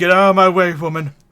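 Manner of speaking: booming, very loud, high bandit captain bellow. Voicing the bandit captain on his turn in the fight: bandit captain voice. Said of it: "he's like".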